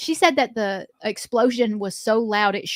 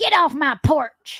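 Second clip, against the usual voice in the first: high-pitched put-on elderly country woman voice; 5 semitones higher than usual. Joking about playing an old lady in an audition: old country lady voice. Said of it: "Like an old country lady".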